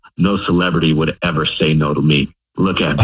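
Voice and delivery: normal talking voice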